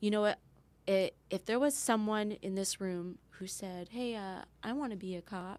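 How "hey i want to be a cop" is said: ordinary talk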